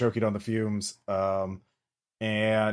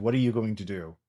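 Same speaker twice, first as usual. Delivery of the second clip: normal talking voice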